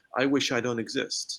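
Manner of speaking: ordinary talk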